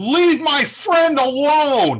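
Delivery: put-on loud, very high kid shout. Describing a scene's opening, the speaker yells in a young child's voice. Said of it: "you hear a young child's voice yell".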